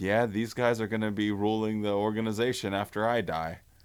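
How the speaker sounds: normal talking voice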